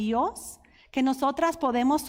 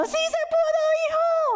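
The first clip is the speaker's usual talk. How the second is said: mock crying while cheering, higher. Retelling cheering when her son scored a goal: imitating a tearful cheer. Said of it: "ahí llorando".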